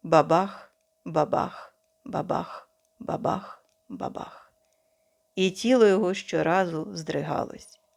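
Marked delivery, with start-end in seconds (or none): 0.1-4.5 whispered, slower. The narrator, pretending to shoot Rafe, keeps making the sound: whispered. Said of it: "шепотів я".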